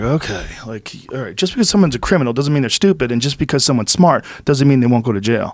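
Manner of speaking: usual speaking voice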